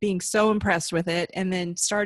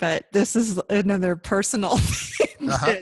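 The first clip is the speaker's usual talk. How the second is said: slow words broken up by laughter. Apologizing for laughing while talking about dreams: laughing while talking. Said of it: "I'm sorry that I'm laughing".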